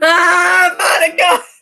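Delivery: loud, high, startled scream. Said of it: "I don't know why I screamed that loud".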